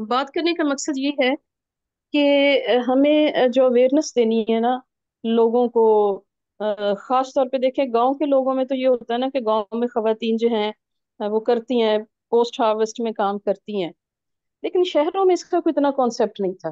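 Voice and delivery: speaking up loudly.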